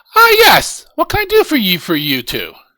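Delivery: high, lilting shopkeeper woman voice. Narrating a scene, voicing the woman behind the counter greeting two customers, in a shopkeeper woman voice. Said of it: "She kind of goes".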